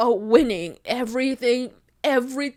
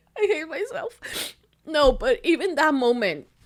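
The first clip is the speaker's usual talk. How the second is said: tearful voice, starting to cry, tears breaking through words; 3 semitones higher than usual. Recalling an emotional moment, speaker feels tears coming again and starts crying. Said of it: "here it comes again".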